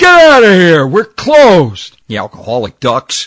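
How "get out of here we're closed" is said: very loud, very high, shrill bellow. Telling a story, the speaker quotes the bartender closing up, retelling a bellow. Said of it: "He bellows out".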